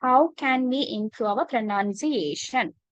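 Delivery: ordinary talk, nothing marked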